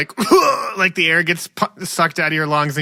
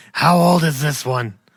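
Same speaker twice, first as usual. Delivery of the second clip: loud stage whisper. A game master voices a character badly trying to hide, in a loud stage whisper. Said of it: "He he whispers quite loudly".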